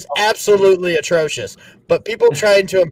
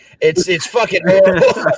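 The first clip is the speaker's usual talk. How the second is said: plain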